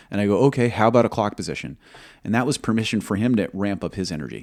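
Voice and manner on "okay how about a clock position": play-acted, dry, pointed, almost sarcastic tone. Recalling asking him for a clock position, retelling an almost sarcastic line. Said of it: "I was almost sarcastic".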